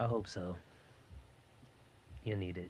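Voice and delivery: depressed, dejected tone. Answering a question about the team's draft pick: sounding depressed. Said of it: "you sound so depressed".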